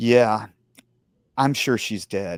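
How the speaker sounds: matter-of-fact, level and even tone. Retelling a calm man's answer about a death: imitating a matter-of-fact reply. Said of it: "looked at me really just matter of fact and goes".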